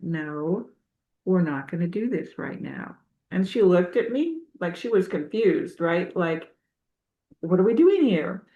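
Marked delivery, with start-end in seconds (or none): 0.0-3.0 hushed, calm, low-energy, gentle, soft half-whisper. Recounting stopping a dog from jumping on them, the speaker is retelling a half-whisper. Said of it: "And I whispered".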